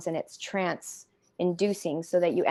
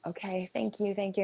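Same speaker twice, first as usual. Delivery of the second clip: play-acted tearful bawling and sobbing; 7 dB quieter than usual. Retelling thanking a visitor after being told the spirits would leave: retelling own bawling thanks. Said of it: "And I'm bawling and crying".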